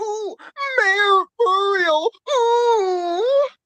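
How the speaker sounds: very high, slow, drawn-out oohs. Retelling meeting a voice actor, doing a Courage voice impression. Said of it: "I did my voice impression".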